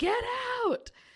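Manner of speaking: mock, shrill, very high, loud yell. Retelling the yell heard from someone at his car: retelling a loud yell. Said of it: "a much louder yelling say".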